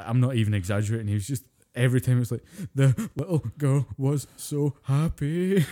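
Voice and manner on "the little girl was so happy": put-on very slow, high, drawn-out sobbing voice. Retelling how a friend sobbed at a movie: imitating someone crying. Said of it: "He's crying like a fucking prom queen".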